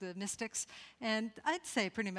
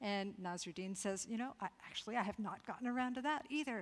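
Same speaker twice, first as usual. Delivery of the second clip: ordinary talk, nothing marked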